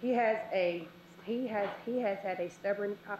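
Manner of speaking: slow, halting, nervous, stumbling over words. Commenting at a meeting about a son's school: nervous, stumbling over words. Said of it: "I'm kinda nervous".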